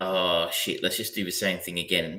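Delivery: ordinary delivery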